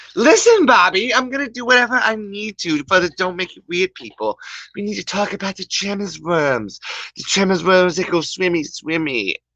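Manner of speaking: high cartoon voice. Doing Bob's Burgers voices, one character answering Bobby, in a Bob's Burgers mom voice. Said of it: "I'm gonna be doing the voices from Bob's Burgers".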